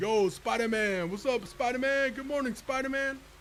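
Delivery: high, teasing, playful call-out tone. Retelling how everyone at a job greeted him, imitating a coworker's greeting. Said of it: "I say it like him".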